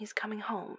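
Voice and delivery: tender and kind. A woman speaks to a man too shocked to finish his sentence, gently. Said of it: "Darcy said gently".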